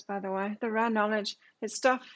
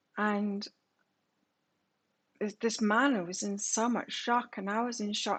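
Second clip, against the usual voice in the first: ordinary talk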